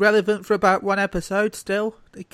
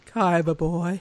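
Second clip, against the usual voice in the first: exaggerated sultry voice. Redoing an impression after a listener's comment, as a sultry Pegasus impression. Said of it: "That is absolutely a porno version of that".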